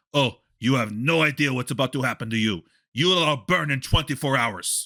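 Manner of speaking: put-on Caribbean-type accent. Retelling a man's death threat, replicating his Caribbean-type accent. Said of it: "he clearly had an accent, and I'm trying to replicate it".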